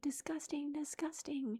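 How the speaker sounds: mock exasperated scream, high but kept contained. Describing a cringey dating show, the speaker acts out screaming at the tv. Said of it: "I'm just screaming at the T V".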